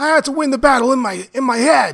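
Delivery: put-on voice, raspy and breathy. Mid-conversation about Goggins: raspy breathy Goggins impression. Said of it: "really good Goggins impression".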